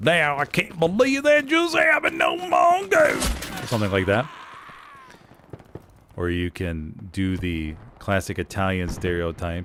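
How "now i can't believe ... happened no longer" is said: funny put-on southern twang, very high, swooping. Giving examples of voices used on stream, in a funny southern twang. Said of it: "it's got a funny southern twang".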